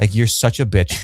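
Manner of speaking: imitated amused, condescending chuckle. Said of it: "just maybe almost chuckles".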